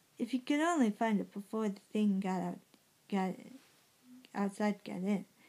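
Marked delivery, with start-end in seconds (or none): none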